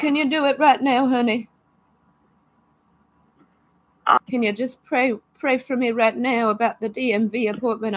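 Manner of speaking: nervous, teary voice, close to crying. Worried about a DMV appointment, the speaker asks the listener for prayer: nervous, close to tears. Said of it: "I'm nervous. I could almost cry".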